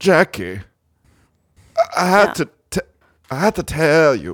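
high vampire voice. Addressing Jackie by name with news to tell: Dracula voice. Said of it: "Is that Dracula?".

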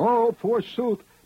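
very high, hammy, theatrical tragic holler. Mocking the actors in an ancient Greek tragedy, a mock-tragic theatrical holler. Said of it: "and they holler".

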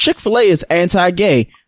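ordinary talk

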